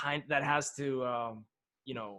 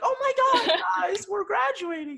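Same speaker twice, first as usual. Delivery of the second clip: put-on very high, bubbly, giggling excited gush; 7 dB louder than usual. Imitating Gabe during the graduation speech: imitating Gabe giggly and excited. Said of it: "he was all, like, giggles".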